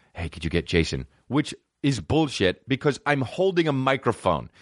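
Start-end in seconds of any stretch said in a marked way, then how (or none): 0.2-1.1 whispering, pitched lower. Retelling what someone whispered to the speaker during a show, imitating a whisper. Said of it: "and then he whispered to me".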